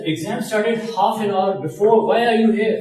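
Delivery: high, loud, irritated and annoyed scolding tone.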